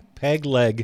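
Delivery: slow, loud, deliberate, spelled-out delivery. Describing paintings of a peg leg monkey, said slowly. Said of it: "I want to say that slowly because I want to make sure people get it".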